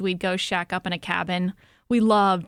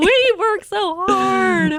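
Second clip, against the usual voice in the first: mock bawling, higher and louder; 12 semitones higher, 7 dB louder than usual. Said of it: "just starts bawling on the t-".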